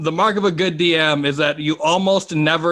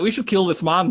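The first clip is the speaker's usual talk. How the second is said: put-on Scottish accent; 3 semitones higher than usual. Imagining how scottish people would react to their accent, in a scottish accent. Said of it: "Scottish people hear it, they'll be like".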